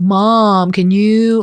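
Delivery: California drawl, vowels stretched on "mom". Imitating a son back from school abroad: imitating elongated words. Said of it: "he elongates words like".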